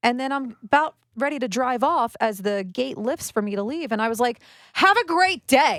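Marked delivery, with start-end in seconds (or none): 4.7-5.8 acted-out, very angry, biting, loud, high-pitched. Retelling what she said to the silent woman at the gate: mock-angry. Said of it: "said it very angrily".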